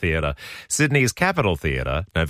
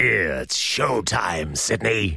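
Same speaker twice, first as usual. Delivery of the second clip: put-on movie ghoul voice. A radio host promoting a musical coming to town: Beetlejuice impression. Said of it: "That was my impersonation of Beetlejuice".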